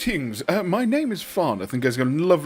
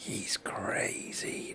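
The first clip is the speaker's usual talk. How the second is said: side-of-the-mouth mutter, much lower and quieter; 6 semitones lower, 15 dB quieter than usual. Voicing a character who turns so only two others can see, muttering out the side of the mouth. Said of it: "out the side of his mouth".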